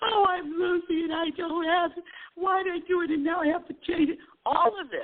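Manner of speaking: mock all-out crying, very high and tearful. Retelling breaking down over plane reservations: imitating own crying. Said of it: "I get into this all-out crying".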